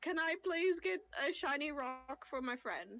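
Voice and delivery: put-on British accent, polite. A roleplaying player speaks in character to a British character: British accent. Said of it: "I did a British accent".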